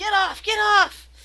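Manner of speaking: very high-pitched, loud yell. Voicing a guy restrained on the deck by two others: yelling. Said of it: "He's yelling".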